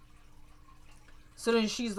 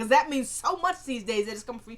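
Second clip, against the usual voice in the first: plain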